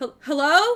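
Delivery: very loud, halting, faltering call-out. Voicing a character calling out to the party from below: Zuko calling out. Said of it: "you hear Zuko's voice call out once again".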